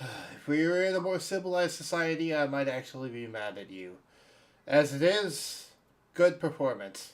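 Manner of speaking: sighing delivery, words let out on a sigh. Game master voicing the bartender's reply to a player's French accent, sighing. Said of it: "just kind of sighs and says".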